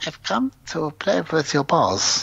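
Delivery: animated, swooping put-on voice, pitch swinging all over. Joking about a German magician, doing a Christoph Waltz impression. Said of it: "I was trying to do an impression".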